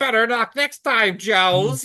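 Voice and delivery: very high, cackling villain voice. Critiquing a movie, speaker imagines the Baroness escaping by helicopter; cackling Baroness voice. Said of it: "as she cackles".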